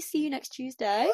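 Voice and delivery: put-on high-pitched Liverpool Scouse accent. Retelling what two people in a crowd called out: imitating a Scouse accent. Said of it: "in a, like, n-, Scouse accent".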